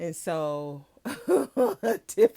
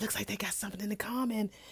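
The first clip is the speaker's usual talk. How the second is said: sly, hushed, soft whisper; 3 semitones higher, 9 dB quieter than usual. Retelling how William whispers to Geneva: imitating a whisper. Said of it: "whispers over to Geneva".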